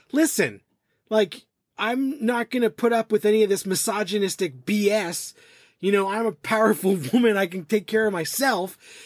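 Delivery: put-on fed-up, indignant, angry rant. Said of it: "she goes on, like, an angry rant".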